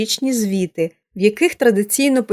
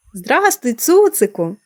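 delighted, glad, joyful cried-out exclamation; 2 semitones higher than usual. Narrator reads the girl greeting a small dog she recognizes, a joyful exclamation. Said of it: "зраділо вигукнула Поліанна".

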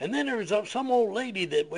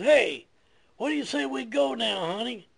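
pitched-up fatherly voice, calling out; 5 semitones higher than usual. Retelling a story where a father calls to his son: imitating a father yelling out. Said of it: "he yells out to his boy".

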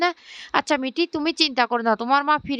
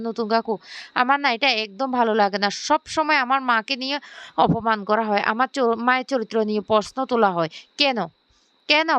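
ordinary delivery, nothing marked

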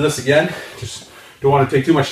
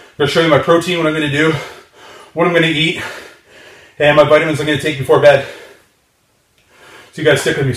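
breathless, winded voice. Finishing an arm workout and talking to viewers, out of breath. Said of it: "Sorry, I'm out of breath".

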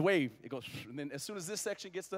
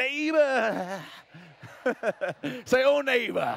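loud, high country preacher calling voice; 7 semitones higher, 7 dB louder than usual. Speaking to a congregation, telling them to greet their neighbor: country preacher voice. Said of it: "country preacher voice on".

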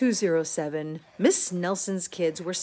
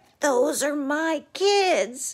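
rough, raspy, scratchy, pitched-up, slow voice; 8 semitones higher, 3 dB louder than usual. Miss Nelson spots her kids out of school, scratchy voice. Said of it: "she said in a scratchy voice".

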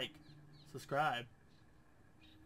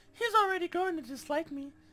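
put-on high-pitched girly voice. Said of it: "Should I be reading this in a girly voice?".

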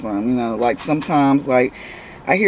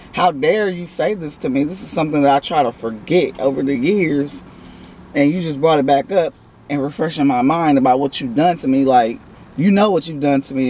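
plain

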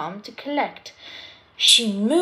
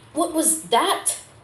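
frightened, startled, high fearful cry; 5 semitones higher than usual. Reading a story aloud, Emily hears a huge crash in the dark yard: shouting fearfully. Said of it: "Emily shouted fearfully".

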